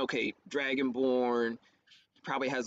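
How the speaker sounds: plain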